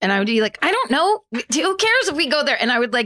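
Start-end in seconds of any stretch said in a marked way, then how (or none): 0.6-2.6 put-on very high, cranky, crabby voice. Retelling getting grumpy from a hot seat heater: imitating own crabby past self. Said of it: "So I would start to get really bitchy".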